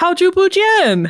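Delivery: cheerful, bright English intonation. Mock greeting in Mandarin said the English way: excited, English-style greeting. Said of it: "I'll say it in the way that you would say it in English".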